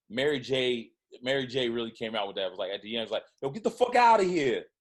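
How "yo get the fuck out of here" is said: put-on tough, angry, dismissive New York accent, pitched up, snapped. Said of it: "how New York she became".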